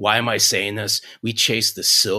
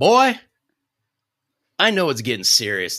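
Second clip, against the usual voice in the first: put-on, laid-on sing-song Mississippi accent; 4 semitones higher than usual. Imitating a woman who still calls him boy, in her accent. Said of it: "This is the end of the accent".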